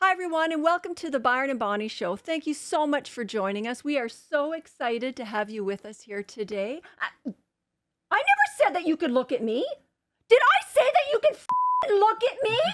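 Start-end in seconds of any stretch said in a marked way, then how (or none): 8.1-12.6 very high, shrill, swooping, scolding angry yell. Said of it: "like I yell at you all the time".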